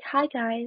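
calm, soothing narrator voiceover. Describing a video voiceover they recorded: recreating a really soothing voice. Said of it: "I tried to have a really soothing voice".

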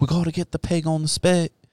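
fake half-British accent. Retelling people dressed up as colonists: fake semi-British accent. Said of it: "with fake semi-British accents".

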